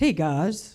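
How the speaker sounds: relaxed, easy, casual delivery. Retelling a phone call with the President: Barack Obama impression. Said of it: "I can't do it, Barack Obama".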